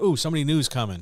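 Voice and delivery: high, loud, fast, eager, excited gush. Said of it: "where I still like".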